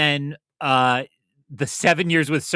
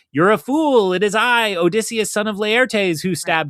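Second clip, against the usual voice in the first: gloating, boastful, high yell; 8 semitones higher, 4 dB louder than usual. Retelling the myth, acting out Odysseus shouting back, imitating Odysseus yelling back. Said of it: "he yells back like".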